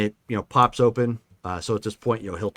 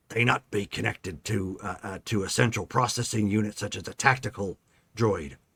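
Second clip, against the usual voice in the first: muttered under breath, much quieter and lower; 3 semitones lower, 7 dB quieter than usual. Game character muttering before turning to question a droid, muttering under breath. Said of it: "he mutters like essentially under his breath".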